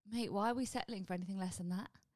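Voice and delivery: ordinary talk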